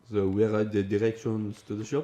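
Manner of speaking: loud, belted-out put-on French accent. Explaining how accents shift, speaking English to a French person: French accent. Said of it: "speaking to a French person in English, you'll be like".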